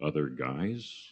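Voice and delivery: play-acted clueless, guileless, dim-sounding tone. Retelling own clueless reply on a phone call: imitating own clueless reply. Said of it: "here's my bonehead response. I literally do this".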